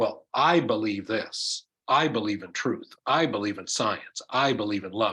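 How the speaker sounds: ordinary talk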